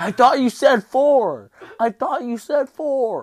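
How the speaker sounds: very high, very loud, shrill screaming. Re-enacting your past self yelling at him: retelling screaming at him. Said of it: "And then I'm screaming at him".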